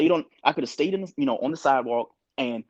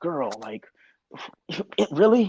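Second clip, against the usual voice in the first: exasperated huffing and puffing. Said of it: "you can hear them huffing and puffing".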